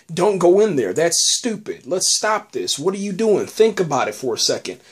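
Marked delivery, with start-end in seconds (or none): none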